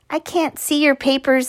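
tired, weary, worn-out and drained. The narrator speaks to Tobias as he gathers up his papers: tired. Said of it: "I said tiredly".

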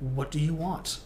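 ordinary talk

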